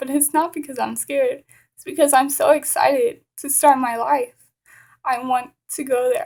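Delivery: voice catching with emotion. Speaker tells listeners about wanting to teach children in Afghanistan, choking up. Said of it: "now you can see that I'm choking up".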